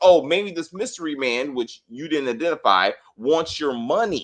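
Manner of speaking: ordinary talk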